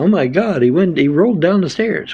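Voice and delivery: high, frantic, panicky freaking-out cries. Retelling how others freaked out when he rolled down the stairs: imitating people freaking out. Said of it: "they was all freaking out".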